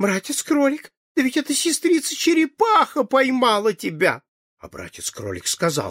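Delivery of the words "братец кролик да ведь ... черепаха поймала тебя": frightened, much higher pitch. Narrator reading Sister Fox's words to Brother Rabbit, in a frightened voice. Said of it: "сказала испуганным голосом".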